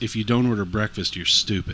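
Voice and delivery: normal talking voice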